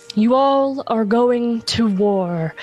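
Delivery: reverberating, echoing, resonant otherworldly voice. Voicing Sabine, glowing on the shop floor, addressing the group: Sabine's echoing voice. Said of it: "says in echoing voice".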